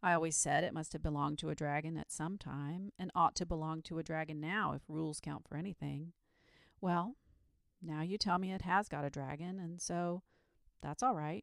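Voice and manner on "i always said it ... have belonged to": ordinary delivery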